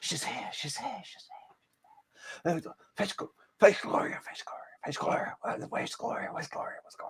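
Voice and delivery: acted hushed high whisper. Speaker acting out whispers overheard with super hearing, imitating overheard whispers. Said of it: "these whispers".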